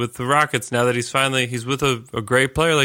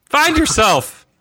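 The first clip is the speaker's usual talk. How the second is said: put-on shrill, very high, loud coach-style scream; 6 dB louder than usual. Imagining the coach on the sideline: imitating a coach screaming. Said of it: "Is he just screaming, like".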